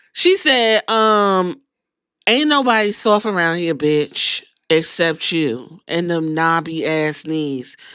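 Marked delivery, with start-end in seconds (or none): 2.3-7.7 smooth mature woman's voice. Retelling B-Fab's reply to Charlotte Flair: silky grown woman voice. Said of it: "B-Fab got a, a grown woman voice".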